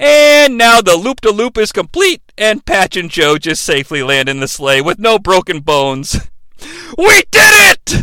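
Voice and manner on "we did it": play-acted shrill, crazed madman yell, very high-pitched. Retelling a story where the sleigh lands safely, Santa yelling like a madman. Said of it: "Santa yells like a madman".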